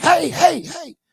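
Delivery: very high-pitched, loud yelping calls. Retelling what he said as ISIS charged at him, in a high-pitched voice. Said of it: "high pitched voice".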